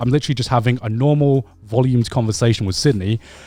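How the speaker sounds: usual speaking voice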